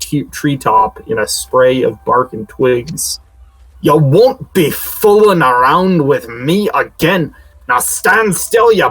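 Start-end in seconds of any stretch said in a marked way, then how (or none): 3.8-8.7 put-on thick, sloppy drunken slur, pitched high. A giant threatens someone after a missed fist swing, drunken booming voice. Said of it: "It slurs in a deeply drunken, booming voice".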